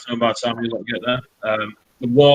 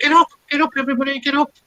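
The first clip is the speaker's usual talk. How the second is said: put-on very high-pitched young female goblin voice. Game master voicing a goblin girl knocking to wake everyone, young goblin girl voice. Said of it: "It's the young goblin girl".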